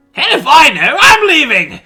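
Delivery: shrill, booming villain voice pitched way up, loud. Answering the host as the special guest: Joker voice. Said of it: "Mister Joker".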